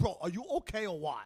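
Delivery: lisp on the s sounds. Retelling what an actor from Staten Island said, Guido lisp impression. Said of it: "The guy had like a Guido lisp".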